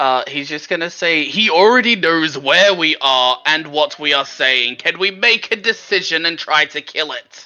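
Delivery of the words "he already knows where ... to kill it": sudden, screaming, booming shout. Player voicing Harry casting thaumaturgy on himself, in a screaming, booming voice. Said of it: "in a screaming and booming voice".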